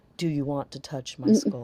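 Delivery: rather gothic, deep-toned voice. Retelling what a haunt actor said while helping her up: imitating a deep gothic voice. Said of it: "in a rather gothic voice that was quite deep".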